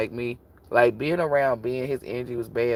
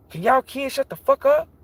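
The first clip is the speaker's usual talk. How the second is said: mock irritation, higher and louder; 14 semitones higher, 5 dB louder than usual. Acting out a hypothetical parent snapping at kids: acting irritable.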